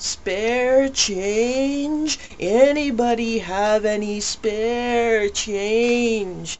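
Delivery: very slow, high, odd, strained, drawn-out voice. Retelling how a man calls out asking for spare change, odd strained voice. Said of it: "In an odd and strained voice".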